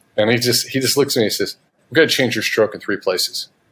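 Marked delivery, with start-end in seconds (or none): 1.9-3.5 put-on gruff, nasty voice. Retelling what a coach said on the first day: imitating a gruff, nasty coach. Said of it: "kind of nasty to me and real gruff".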